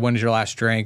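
usual speaking voice

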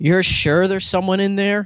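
mock off-putting female tone. Retelling a lady in a bathroom line questioning him: imitating a lady's off-putting tone. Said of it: "the tone of her voice that was really off-putting".

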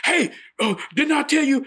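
shrill, very high, put-on screaming holler. Telling a story about a big prison guard, retelling his hollering at a guy. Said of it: "He's hollering and screaming at the guy".

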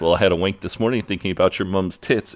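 normal talking voice

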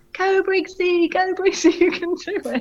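put-on, very high-pitched, shrill cheering shout. Retelling a man cheering from his parked car: imitating Rob shouting. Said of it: "And he was shouting".

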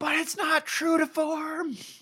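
put-on very high, very slow, drawn-out nerd scream. Imitating an imagined reader objecting to the adaptation: imitating a nerd screaming. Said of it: "just screaming like".

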